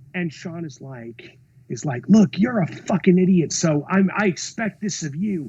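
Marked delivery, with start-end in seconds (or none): 2.0-5.5 mock, loud, berating rant. Retelling a producer chewing out a cinematographer: imitating someone berating. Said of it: "tearing my cinematographer a new asshole".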